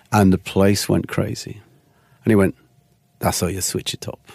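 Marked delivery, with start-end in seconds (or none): 3.1-4.1 smooth, silky, breathy hushed whisper. Retelling the club boss teaching him at the turntables, in a smooth voice. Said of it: "a smooth voice".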